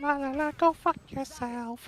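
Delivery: very high, squeaky puppet voice. Describing doing voices around family, the speaker does an Elmo voice. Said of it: "just start doing like a like Elmo".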